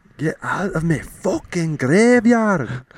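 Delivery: very high, shrill, loud put-on Scottish ghost voice. On the show, a ghost climbing out of its graveyard, in a scottish accent. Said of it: "they say boo with a Scottish accent".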